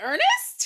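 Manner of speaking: high, loud squeal of shocked disbelief. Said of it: "I was like".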